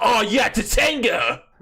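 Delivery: put-on excited fan gush. Imitating game fans who cheer for a character: imitating excited fans. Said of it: "just be like".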